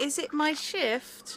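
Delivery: faintly plaintive, soft, high little voice. A voice comes buzzing over the comms, slightly plaintive. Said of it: "slightly plaintive".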